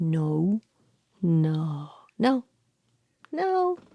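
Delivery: every no said with a different intonation. Speaker demonstrates the many ways of saying no: varied intonations. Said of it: "it has different intonations".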